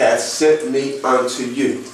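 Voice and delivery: normal talking voice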